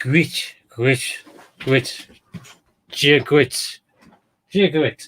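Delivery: light Irish accent with throaty g. Trying to pronounce a name, with a bit of an irish accent. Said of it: "trying to put a bit of an Irish accent on".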